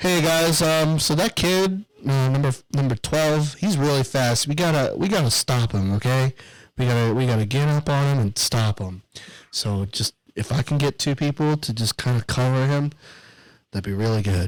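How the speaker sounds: put-on meek coach voice, halting, unsure, timid. Retelling what the coach said in the huddle: imitating a timid coach's tone. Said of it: "In that tone".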